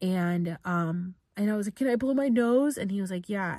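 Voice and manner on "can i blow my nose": acted, high-pitched crying voice, through tears. Recounting crying and asking a man for permission, retelling asking while crying. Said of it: "And I just was crying".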